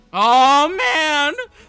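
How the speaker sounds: voice cracking. Spotting a new disagreement in the list, the speaker exclaims, voice cracking. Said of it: "did my voice just crack a little bit there?".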